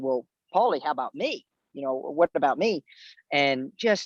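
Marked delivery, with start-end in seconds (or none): none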